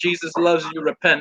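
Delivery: normal talking voice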